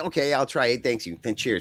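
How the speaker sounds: usual speaking voice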